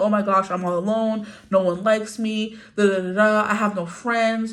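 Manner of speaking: put-on fake crying and sobbing. Imitating someone sitting there crying about being alone: mock crying. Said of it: "instead of you sitting there crying".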